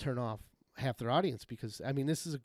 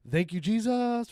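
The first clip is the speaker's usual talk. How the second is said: all-out loud, high-pitched shouted yell; 9 semitones higher, 8 dB louder than usual. Retelling an interview after a Super Bowl win: imitating Kurt Warner yelling loudly. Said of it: "really loud".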